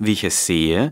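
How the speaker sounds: stress and lift on WIE, ICH left light.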